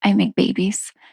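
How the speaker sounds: soft, gentle, kindly, thoughtful doctor-like voice. Speaker retells what a doctor said when asked what she does: retelling doctor's soft voice. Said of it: "in her really soft voice".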